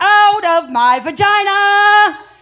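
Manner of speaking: very loud, very high, slow, shrill, drawn-out yell. Retelling yelling at a gynecologist during an exam: retelling a loud yell. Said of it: "So I decided to yell out".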